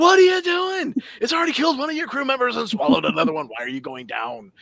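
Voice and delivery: very high-pitched, wild, swooping, crazed ranting voice. Recounting watching Picard's choices in an episode, retelling crazed talk at TV. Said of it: "talking to my TV like a crazy person".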